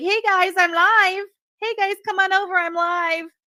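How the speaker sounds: very high, loud, mocking parody voice. Mocking someone who calls friends from Discord: mocking imitation of someone. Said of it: "go in your Discord and be like".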